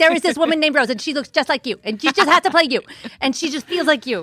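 very high pitch, rattled off nonstop and fast. Showing how George talks after being doubted: imitating George fast-talking. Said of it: "That's a really good impression".

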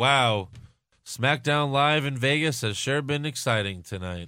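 flat, dead-level robotic monotone. Mocking a SmackDown presenter's on-air line, robotic Dasha Fuentes impression.

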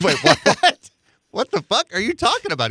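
stunned disbelief, very high-pitched, swooping. Retelling a phone call during a game: retelling own shocked reaction. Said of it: "I'm like".

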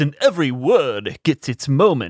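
creepy horror-film villain voice. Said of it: "he talks like this".

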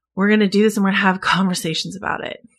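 ordinary talk, nothing marked

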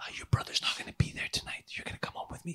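very soft, hushed, breathy whisper. Retelling what the sister-in-law whispered into his ear: imitating a whisper. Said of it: "leans over and whispers into his ear".

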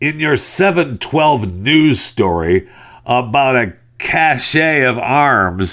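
annoyed, pissed-off voice. Reading aloud an email from Dominic, in Dominic's pissed voice. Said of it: "I'll read it to you in uh, Dominic's pissed voice".

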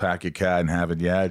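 put-on Boston accent. Imitating how Boston people talk: imitating a Boston accent. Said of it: "Is that how they talk?".

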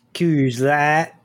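Texas accent. Asked by another speaker to say it with a texas accent. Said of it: "say Coors Light with a Texas accent".

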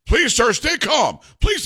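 play-acted very high swooping shouting that keeps climbing. Retelling a movie scene where staff plead with a passenger: imitating people yelling. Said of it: "they're all yelling".

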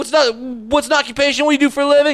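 eager, high, shouted, hyped-up host voice.

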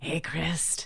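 eerie put-on voice, soft. Playing Arvid, leaning in to address Christ, in Arvid's spooky voice. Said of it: "This is my spooky voice".

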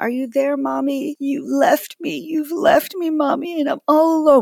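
mock, very high, drawn-out child's pleading scream. A mother retells her child screaming from the bathroom, imitating her child screaming. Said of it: "She was screaming".

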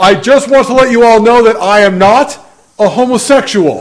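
mock grand theatrical voice, high. Retelling Hyrum standing up at Denny's to announce to the restaurant, loud and theatrical. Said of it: "in a very loud, theatrical voice".

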